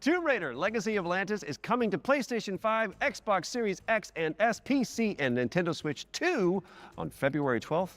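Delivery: excited, high-pitched voice.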